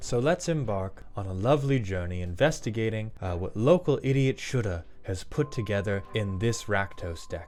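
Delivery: nature documentary narrator voice. Narrating a card deck review in nature-documentary style: Attenborough narrator voice. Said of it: "This is supposed to be in the Mauled Attenborough voice".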